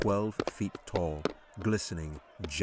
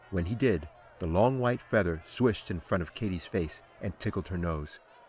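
plain reading voice

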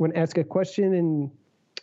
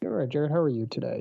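listless, flat, low-energy voice, pitch dropped; 4 semitones lower, 3 dB quieter than usual. Answering the host's greeting at the start of a podcast, low energy. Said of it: "that was real low energy out of you".

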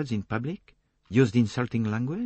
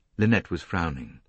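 plain

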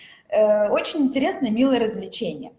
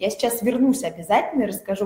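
normal talking voice

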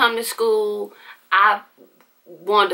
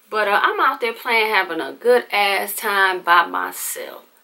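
ordinary talk

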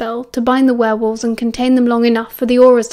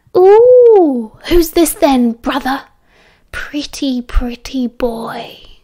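smug gloating crow, drawn-out "ooh". Pinning a man to the ground, a woman taunts him: crowing. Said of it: "she crowed".

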